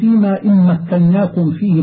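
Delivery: plain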